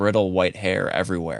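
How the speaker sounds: plain reading voice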